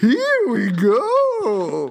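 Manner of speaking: dazed, high, slow, wobbly groaning voice.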